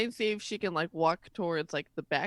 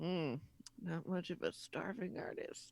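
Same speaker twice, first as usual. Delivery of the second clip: slow, very quiet whisper under the breath; 11 dB quieter than usual. Voicing a character looking at a house: whispering under her breath. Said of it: "she whispers under her breath".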